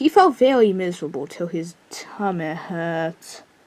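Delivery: slow, put-on British accent, storybook read-aloud style. Reading a story aloud just because, in a British accent. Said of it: "I'm saying that in a British accent because why not?".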